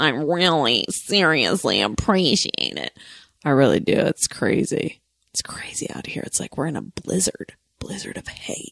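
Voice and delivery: odd, goofy, weird, affected put-on voice. Thanking supportive people while doing a weird put-on voice. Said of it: "even though I'm doing this weird voice".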